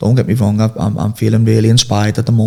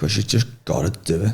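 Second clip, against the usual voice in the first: through gritted teeth, much quieter; 2 semitones lower, 8 dB quieter than usual. Answering a question about being disciplined, saying it through gritted teeth. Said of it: "You said that through your teeth".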